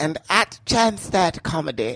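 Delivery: awful, terrible put-on British accent. A host reads out his social media handles, in a terrible British accent. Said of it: "Terrible British".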